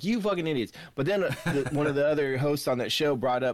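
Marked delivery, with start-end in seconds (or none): 0.0-0.7 mock hollering, yelled and pitched high. Retelling yelling at headphones today: imitating own yelling. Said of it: "I was sitting there yelling at my fucking headphone".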